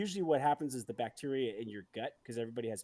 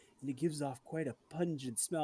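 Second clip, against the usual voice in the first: put-on plain, ordinary English accent; 2 semitones higher than usual. Retelling what the narrator in a whale video said: english accent. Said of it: "the English accent's like".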